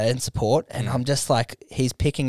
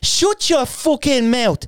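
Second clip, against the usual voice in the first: put-on Irish accent, higher and louder; 12 semitones higher, 4 dB louder than usual. Retelling answering a heckler at stand-up: Conor McGregor impression. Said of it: "abused someone in the audience as Conor McGregor".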